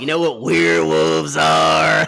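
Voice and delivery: loud, rough, creaky voice pushed out. Showing the other host a Gary Busey impression: Gary Busey impression. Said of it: "This is my Gary Busey".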